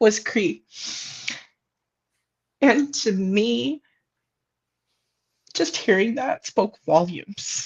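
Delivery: tearful, choked-up voice welling with tears. Speaker recalls a swearing-in ceremony, tearful and choked up. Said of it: "I'm tearing up".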